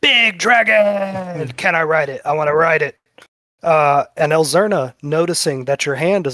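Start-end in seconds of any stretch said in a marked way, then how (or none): 0.0-3.0 put-on tipsy, slightly drunk character voice. Voicing a tipsy character who sees a dragon: tipsy drunk character voice. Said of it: "a little bit tipsy".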